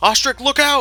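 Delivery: very high-pitched, shrill, very loud scream. Voicing a character warning a companion who is about to fall: yelling a warning in character. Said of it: "Grovel yells out using his reaction".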